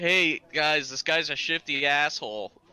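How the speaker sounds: high, very slow, drawn-out loud yell. Yelling across to a party member fifty feet away: in-character yelling. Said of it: "So I'm yelling".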